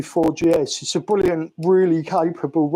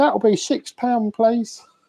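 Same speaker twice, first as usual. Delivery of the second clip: polite, high, put-on shop-assistant voice; 5 semitones higher than usual. Quoting the lady behind the counter, in a put-on counter lady voice. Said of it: "that's my impression of a lady behind the counter".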